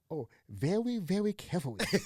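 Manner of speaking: goofy, silly, lisping put-on cartoon-character voice. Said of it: "Was he Elmer Fudd?".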